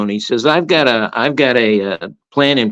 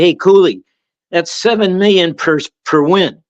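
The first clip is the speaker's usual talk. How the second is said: put-on, heckling, yelling call; 5 semitones higher than usual. Retelling how a student heckled a coach at a game: imitating a student yelling. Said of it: "He yells out".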